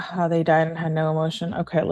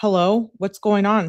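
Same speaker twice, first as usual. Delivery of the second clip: ordinary talk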